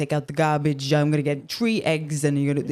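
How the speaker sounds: imitated thick New York accent. Explaining where their way of speaking comes from, imitating dad's new york accent. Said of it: "my dad talks like that".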